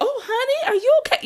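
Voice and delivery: very high voice with a light Texas twang. Retelling meeting a woman they grew up watching, quoting her slight Texas accent. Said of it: "her little Texas accent".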